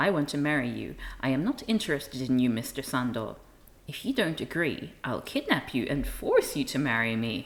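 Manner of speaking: mock smug delivery. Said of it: "he says smugly".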